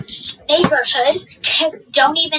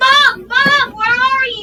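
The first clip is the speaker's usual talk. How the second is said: mock screaming, pitched high; 8 semitones higher, 3 dB louder than usual. Retelling being lost and calling for mom: imitating own past screaming. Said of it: "I'm screaming at this point".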